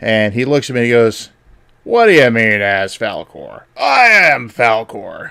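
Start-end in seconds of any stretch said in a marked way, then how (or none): 1.8-5.3 slow, drawn-out character voice with swooping pitch. Retelling his reply after hearing the girls loved him: Falkor voice. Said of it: "You just did the Falkor voice".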